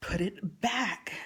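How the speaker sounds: furious, angry, harsh yelled shout. Retelling a third demand that Poppy put the shirt back: imitating an angry shout. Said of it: "and I felt psycho".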